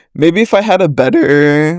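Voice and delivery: voice cracking mid-phrase. Talking about a recording's microphone when the voice cracks again. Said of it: "my voice just cracked again".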